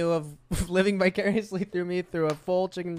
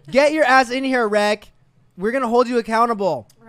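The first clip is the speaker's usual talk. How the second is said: put-on yelling voice, higher pitch and louder; 5 semitones higher, 9 dB louder than usual. Retelling what was yelled earlier: imitating own yelling. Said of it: "you heard me yelling at him".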